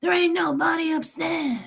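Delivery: put-on New York accent. Retelling a movie scene, quoting Steven Seagal's raspy New York accent. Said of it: "the rasp in his voice".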